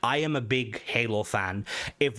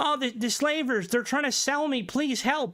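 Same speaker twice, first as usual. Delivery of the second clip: put-on very high, pleading little-kid voice; 12 semitones higher than usual. Retelling a game scene where a kid asks for help: imitating a kid begging for help. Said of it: "a kid comes up and he's like".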